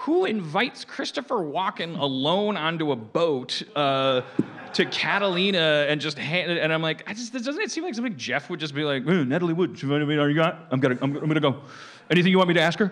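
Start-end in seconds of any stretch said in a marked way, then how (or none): 9.1-12.9 goofy put-on cartoon-bear voice, higher, louder, faster. Acting out what Jeff would say on the boat: Jeff impression, like Yogi Bear. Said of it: "Where am I, Yogi Bear?".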